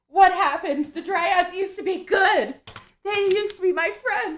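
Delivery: very high, loud crying out through sobs. A player voices a character in the party, sobbing. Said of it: "is over here sobbing".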